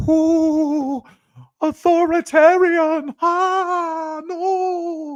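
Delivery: very high, drawn-out, frightened mocking parody voice. Commentator reacting to a deportation plan parodies liberals: mocking impression of liberals. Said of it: "That's my impression of liberals".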